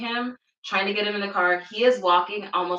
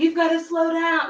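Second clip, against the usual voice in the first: play-acted high, hollered yell; 9 semitones higher, 3 dB louder than usual. Driver retells a man hollering from the back seat; imitating someone yelling. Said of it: "Like he's yelling this".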